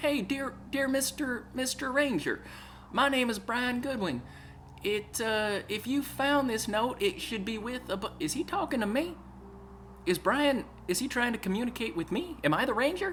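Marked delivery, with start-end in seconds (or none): 0.0-8.0 put-on sweet-as-syrup, syrupy Southern accent. Read out the note to the ranger in Brian Goodwin's syrupy southern voice. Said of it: "Brian says in his syrupy southern voice".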